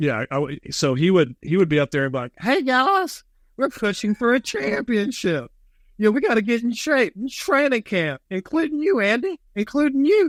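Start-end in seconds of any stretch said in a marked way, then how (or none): 2.4-10.3 very high voice calling out across distance. Doing the voice of the fan yelling from the stands at practice: Jay Summers voice. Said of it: "Please give me the voice".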